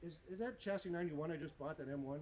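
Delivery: ordinary delivery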